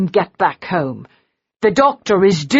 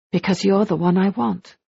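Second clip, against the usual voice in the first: hushed, soft, said under the breath; 4 dB quieter than usual. She answers his question about why she needs him, hushed voice. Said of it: "she said in a hushed voice".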